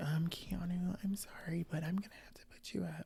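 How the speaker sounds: very quiet, barely audible whisper. Retelling a nomination at the veto: imitating Lauren whispering. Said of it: "Lauren gets up there and whispers".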